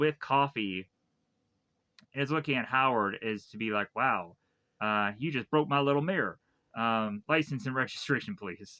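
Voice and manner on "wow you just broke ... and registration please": normal talking voice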